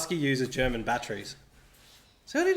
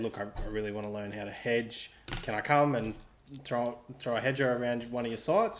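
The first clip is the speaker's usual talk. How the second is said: ordinary delivery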